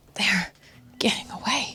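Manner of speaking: fierce, intense, hushed whisper. Narrating a story, Gabi stares after the retreating enemies and gives an intense whisper. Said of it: "stares as she whispers to herself".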